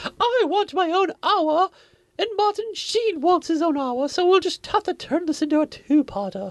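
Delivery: very high, full diva voice. Imitating an actress demanding her own hour of screen time: imitating Patty Duke as a diva. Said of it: "he's doing voices".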